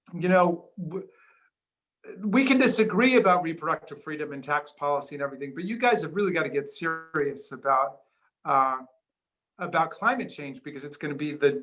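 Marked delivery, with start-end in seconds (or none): none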